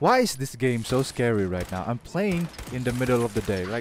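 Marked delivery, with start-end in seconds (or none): 0.0-1.8 sudden, frightened, startled outburst. A streamer playing a game gets suddenly scared. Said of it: "*Immediately gets scared*".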